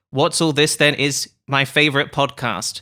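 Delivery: plain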